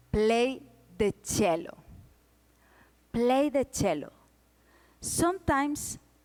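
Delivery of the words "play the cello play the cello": normal talking voice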